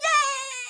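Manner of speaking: play-acted very high, stretched-out, happy, excited cheer. Voicing the wolf just released from the box: excited wolf. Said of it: "Now the wolf is like".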